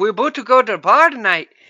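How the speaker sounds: put-on Irish accent, loud and high. Acting out guys joking in an 80s shower scene: accent that came out irish. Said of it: "that sounded more Irish".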